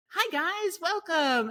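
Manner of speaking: very high-pitched, put-on salesy voice. Recreating how the speaker opened early content: higher-pitched sales voice. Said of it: "it'd be like a higher pitch, more like not even my true like sales voice".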